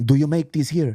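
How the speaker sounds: put-on fake Italian accent. Retelling a customer who came in wanting a refill, in a put-on italian accent. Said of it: "I don't want to do an Italian accent".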